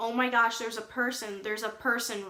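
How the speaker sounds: ordinary delivery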